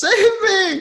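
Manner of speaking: shrill, very loud, high-pitched yell. Voicing a character scrambling away, yelling for help. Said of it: "and yells".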